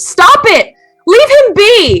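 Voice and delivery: very high, screaming woman's voice. Narrating a scene after a loud slap, voicing a woman who is screaming. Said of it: "A woman screams out".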